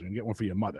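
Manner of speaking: put-on, very strong East Coast accent. Retelling the father ordering an iPad at a store: imitating father, very East Coast. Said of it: "very East Coast".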